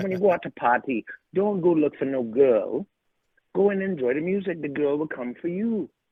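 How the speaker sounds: put-on speaking in a Caribbean West Indian accent. Speaker quotes a man's advice, in his West Indian accent. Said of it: "in his West Indian accent".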